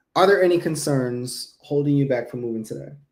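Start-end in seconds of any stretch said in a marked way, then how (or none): none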